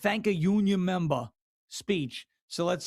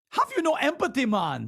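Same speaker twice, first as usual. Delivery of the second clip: put-on high-pitched Jamaican accent; 6 semitones higher than usual. Retelling a Kamala Harris appearance with Colbert: imitating Kamala Harris's Jamaican accent. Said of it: "Remember that Jamaican accent?".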